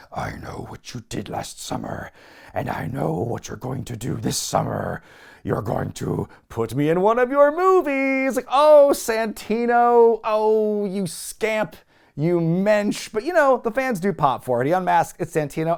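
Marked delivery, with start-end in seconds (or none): 0.1-8.3 heavy, very gravelly, rough, grinding rasp. Retelling how the masked fisherman grabs the mic in the ring, in a very gravelly Shockmaster voice. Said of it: "in a kind of a very Shockmaster gravelly voice".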